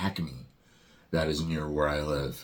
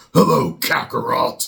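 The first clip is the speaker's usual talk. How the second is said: much deeper, rough, very loud growling voice; 7 semitones higher, 10 dB louder than usual. Comparing the later Vegeta voice actor, whose voice is deeper: deeper Chris Sabat Vegeta voice. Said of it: "his voice is deeper, so he was more like".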